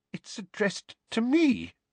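shaking, wavering voice pitched way up. Aunt Petunia answers Uncle Vernon about a howler, in a shaking voice. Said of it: "said Aunt Petunia in a shaking voice".

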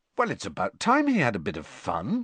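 ordinary delivery, nothing marked

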